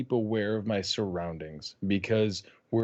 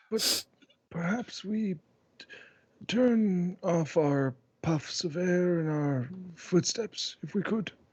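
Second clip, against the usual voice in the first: whisper, higher; 8 semitones higher than usual. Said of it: "whispering to Azur".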